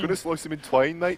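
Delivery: attempted put-on Birmingham accent. Asked for a Birmingham accent, trying it again in an attempted Birmingham accent.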